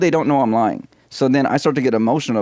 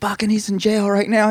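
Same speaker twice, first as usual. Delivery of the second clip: imitated man yelling, higher; 9 semitones higher than usual. Retelling a prank call where the father yelled at his wife: imitating a man yelling. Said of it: "He was yelling at his wife".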